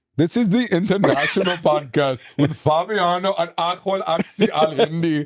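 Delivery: fake Indian accent, very high, slow. Introducing the podcast and a guest by name: put-on Indian accent. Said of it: "why did you do an Indian accent?".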